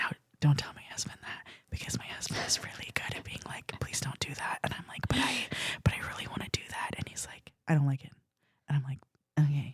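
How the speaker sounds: hushed whisper. Talking about her husband on a podcast while he might overhear, whispering. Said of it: "I don't know if whispering is going to cut it".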